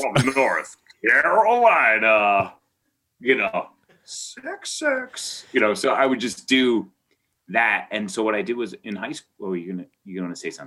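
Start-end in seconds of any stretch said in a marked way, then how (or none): 0.0-5.4 put-on announcer voice, much slower. Recalling something he used to do, the speaker slips into a Chicago Bulls announcer impression. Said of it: "I would do an impression of the Chicago Bulls announcer".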